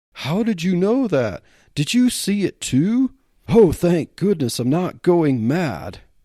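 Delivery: high-pitched, relieved blurt. Jake answers a female police officer, blurting in relief. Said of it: "[name], being a ranch hand, / [name], being a ranch hand, an ordinary guy, had never seen anything like it. But he had heard of other such sightings. Being a reasonable guy, [name] figured there must".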